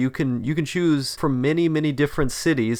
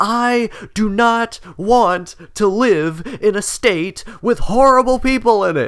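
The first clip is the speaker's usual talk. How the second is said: mock loud, high, drawn-out scream; 8 semitones higher, 5 dB louder than usual. Retelling the mother's reaction when told, acting out her top-of-lungs yell. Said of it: "She yelled at the top of her lungs".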